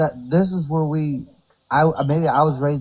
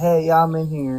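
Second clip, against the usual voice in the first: put-on woman's voice. Acting out someone answering from inside a restroom: imitating a woman's voice. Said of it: "They're gonna hear a woman's voice saying".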